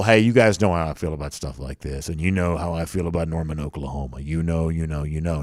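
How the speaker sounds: deep, low-octave voice, hushed and soft. Retelling what a coach said, imitating Lincoln Riley's low voice. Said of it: "goes down to kinda, like, low octave voice".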